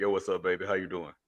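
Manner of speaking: put-on deep voice, very low, very soft, hushed. Recalling greeting someone quickly as a prank, put-on deep voice. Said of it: "I hit him with a deep voice real quick".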